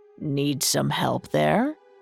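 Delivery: cunning, sly, insinuating tone. A creature behind the gingerbread man offers him help, in a sly voice. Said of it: "A sly voice came from behind".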